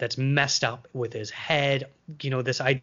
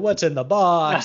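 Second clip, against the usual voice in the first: loud, somewhat held-back, not fully belted delivery; 4 semitones higher, 6 dB louder than usual. Quoting a famous movie line in a Brad Pitt impression. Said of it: "that's my Brad Pitt impression there for ya".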